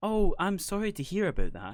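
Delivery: soft, sympathetic sing-song voice. Asked about their Tannoy voice, the speaker shows their gentle sympathetic phone voice. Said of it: "It's it's the gentle kind of".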